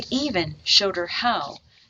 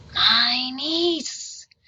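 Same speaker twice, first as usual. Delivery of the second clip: hushed whispering voice, higher pitch; 7 semitones higher, 3 dB louder than usual. Reading a story aloud, voicing Skeleton Man calling the girl: whispering. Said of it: "Skeleton Man whispered".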